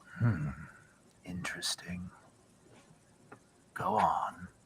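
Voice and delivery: very hushed, very quiet whisper, close to the ear. The narrator voices Vexad breathing in and speaking at the listener's ear; Vexad whispering in your ear. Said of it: "breathe in and whisper in your ear".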